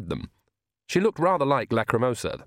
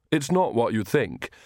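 usual speaking voice

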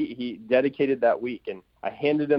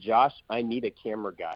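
ordinary delivery

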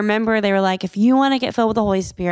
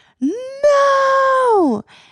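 very high, long-held, drawn-out wailing scream of no; 3 dB louder than usual. Retelling hearing a girl scream during quiet prayer: imitating a girl's scream. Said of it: "you just hear this scream".

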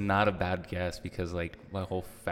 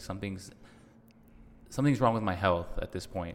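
ordinary delivery

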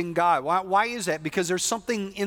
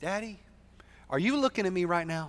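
put-on tiny little girl's voice; 4 dB quieter than usual. A father retells his daughter asking him something in bed, her little voice. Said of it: "in her real little voice".

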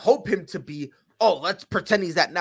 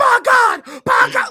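put-on, excited wrestling commentator voice; 9 dB louder than usual. Mocking the announcer's over-excited calls by comparing him: imitating J R commentary. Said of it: "he's like J R commentary".

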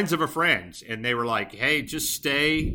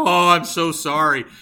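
put-on horrified, high, with "sorry" very slowly drawn out; 5 semitones higher, 8 dB louder than usual. Retelling a mother's apology after her son threw sand: imitating a horrified mother. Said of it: "she's horrified".

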